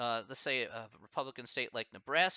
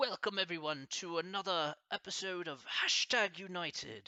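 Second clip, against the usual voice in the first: terrible fake British accent, pitched up; 6 semitones higher than usual. Trying an accent on a show's welcome line, terrible british accent. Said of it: "Can I try a British accent? ... This is my the terrible British accent".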